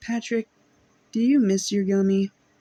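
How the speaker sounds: earnest, sincere tone. Quoting how a man asks Patrick something, imitating someone soft and earnest. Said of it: "he's actually really soft-spoken and earnest about it".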